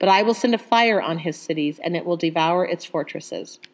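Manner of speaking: plain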